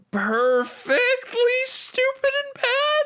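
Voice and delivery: high, climbing, swooping voice. Giving his opinion on a movie's ending, voice going really high. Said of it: "My voice got really high there".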